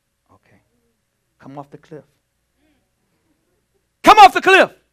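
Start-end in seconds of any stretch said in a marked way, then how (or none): 1.4-4.7 very high, very loud, urgent shout. Demonstrating how a warning must be said in an emergency, urgent emergency warning. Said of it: "say it the way it needs to be said in the emergency".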